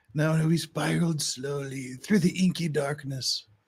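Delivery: bookish, stilted, writerly narration, like reading aloud. Mocking how the other speaker tells his story: mock writerly narration. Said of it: "he's, like, book talking".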